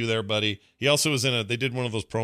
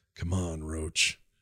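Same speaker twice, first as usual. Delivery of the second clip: very low, bored muttering; 6 semitones lower, 5 dB quieter than usual. Telling how a show's hero greets his horse in the first episode, imitating bored Batman. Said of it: "It's just bored Batman".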